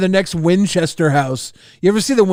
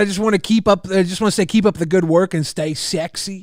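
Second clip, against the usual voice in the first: ordinary talk, nothing marked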